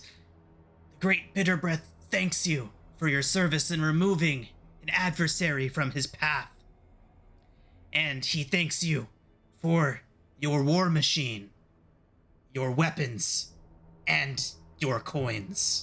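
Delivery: put-on imp voice, like a devil's little servant. Voicing an imp who greets the party: imp voice. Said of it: "And the imp nods and says".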